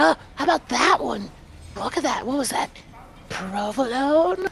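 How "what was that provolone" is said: acted unsettling, creepy delivery. While picking one for Jay, a speaker asks the group: creepy voice. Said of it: "Fucking creepy voice".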